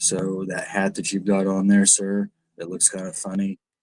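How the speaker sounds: flat, dry monotone. Doing a comedy routine the way Steven Wright does, in a monotone. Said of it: "he's the monotone guy. He he does his comedy routine like this".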